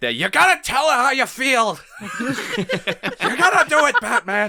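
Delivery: loud, very high screech, drawn out slowly. Imagining Alfred urging Batman through an earpiece: screeching George Costanza voice. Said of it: "That screeching George Costanza voice".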